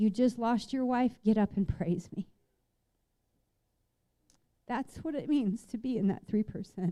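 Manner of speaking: tearful, weeping and crying through the words. Speaker addressing an audience, moved to tears, crying while speaking. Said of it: "Sorry to keep crying".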